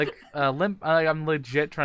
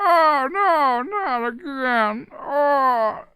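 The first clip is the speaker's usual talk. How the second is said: very high, very slow, goofy put-on voice; 12 semitones higher, 7 dB louder than usual. Retelling the voice done on stream before a friend paid to stop it: imitating own annoying voice. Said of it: "I was doing my".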